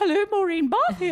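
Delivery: polite telephone voice, very high and loud. Speaker imitates how their mum answers the phone: imitating mum's phone voice. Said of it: "my mum's got a phone voice".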